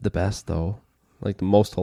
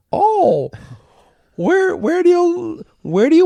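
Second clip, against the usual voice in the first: put-on little old lady voice, higher pitch; 4 dB louder than usual. Acting out a bank teller asking a customer: little old lady teller voice. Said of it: "you're talking like a little old lady teller?".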